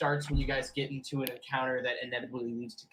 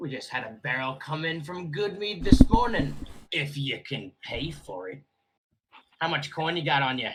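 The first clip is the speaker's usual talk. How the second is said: loud put-on orc voice; 5 dB louder than usual. Voicing the orc bartender greeting a player's character: orc bartender voice. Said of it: "says the orc bartender".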